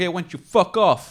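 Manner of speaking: put-on New York accent. Retelling what a man said to him when they argued: thick New York accent. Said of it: "He got real New York".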